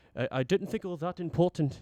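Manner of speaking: put-on British accent. Trying out an accent while telling a story, imitated british accent. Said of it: "I'm trying to do my British accent".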